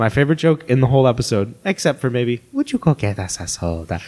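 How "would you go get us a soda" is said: acted, warm tone. Retelling a favorite line from the episode: imitating a warm delivery. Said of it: "it's the warm way he says it".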